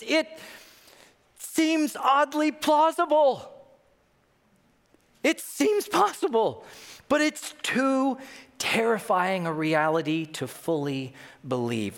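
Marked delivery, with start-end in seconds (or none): 0.1-8.2 put-on choked-up near-tears voice, high, very slow. Retelling a man's reply on a Zoom call: imitating someone choking up. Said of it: "he's like choking up".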